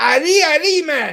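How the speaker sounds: showy Australian accent. Showing off what the speaker calls a perfect Australian accent. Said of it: "I do a perfect Australian accent".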